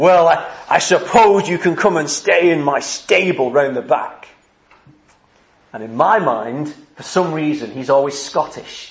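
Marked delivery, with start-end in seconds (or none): 0.0-4.3 gruff put-on character voice. Speaker retelling the nativity play, voicing the innkeeper in a gruff voice. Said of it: "he answers in that gruff voice".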